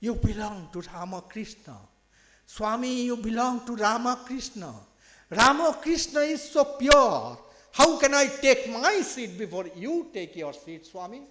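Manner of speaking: high, loud, faltering broken English. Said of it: "in a faltering voice, in broken English".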